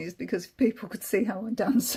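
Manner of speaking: words breaking up with giggles throughout. Reading a passage aloud and pausing to comment: laughing while talking. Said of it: "I'm sorry I'm laughing".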